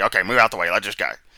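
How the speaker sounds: mock pushy, rude, loud, barking voice. Imitating someone who has to be rude: imitating a rude order. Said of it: "he has to be rude right there".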